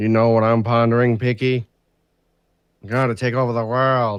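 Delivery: put-on cartoon mouse voice. Asked to do Pinky and the Brain, doing the Brain impression. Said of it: "Now give us Pinky and the Brain".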